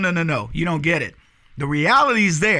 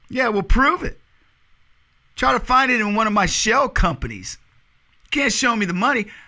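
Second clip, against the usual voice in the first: put-on smug, goading voice, pitched up; 5 semitones higher than usual. Retelling a clip of a man answering a question about the money, mock-smug. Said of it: "he smugly goes".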